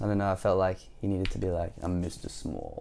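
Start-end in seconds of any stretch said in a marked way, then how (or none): 1.8-2.8 deep, low, soft storybook character voice. Reading a story aloud, voicing the tiny character at the door, deep voice. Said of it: "I gave him a deep voice".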